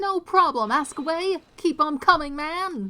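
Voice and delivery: very loud, high-pitched, ear-splitting yelling. Character answers a lawyer who wants to ask questions, shouting. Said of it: "my ears ache already".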